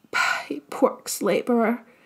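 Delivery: strangled, choked whisper, forced out. Lena, told by the mayor to read her slip out loud, in a choked whisper. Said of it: "Lena said in a choked whisper".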